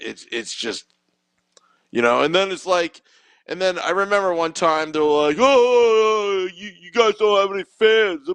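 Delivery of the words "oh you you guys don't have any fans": put-on annoying, obnoxious, drawn-out New York accent. Retelling something other people once said, in an obnoxious New York accent. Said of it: "their obnoxious New York accent".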